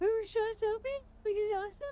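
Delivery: very high words stretched through a yawn. Wrapping up before calling it a night, yawning while speaking. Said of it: "Sorry, I'm yawning".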